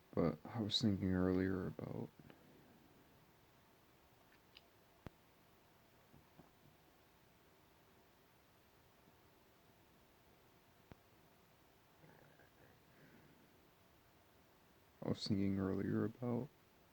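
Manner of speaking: crying while talking. Making a video while crying, a little embarrassed: crying while talking. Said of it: "making a video while I'm crying".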